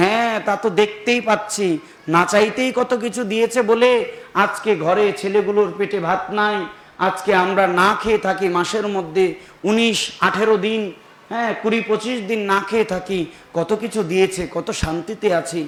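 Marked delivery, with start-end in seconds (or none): none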